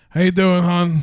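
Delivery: sultry, sexy woman's voice. Playing a phone sex worker answering a call: sexy voice as a woman. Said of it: "Give me your sexy voice".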